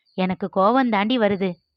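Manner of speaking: ordinary delivery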